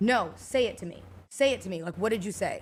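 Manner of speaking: plain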